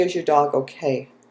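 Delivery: plain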